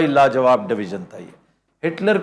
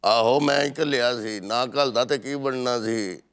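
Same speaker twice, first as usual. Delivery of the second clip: loose, lazy, slow, soft, oddly mannered drawl; 3 semitones lower, 6 dB quieter than usual. Mimic a man who spoke in a strange style, imitating an odd, slack way of speaking. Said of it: "इस तरह बोला है अजीब से अंदाज में / कितने ढीले".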